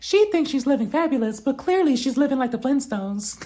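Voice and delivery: very small squeaky voice. Retelling what Sheree said at Kenya's house, in a Mickey Mouse voice. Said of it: "in her Mickey Mouse voice".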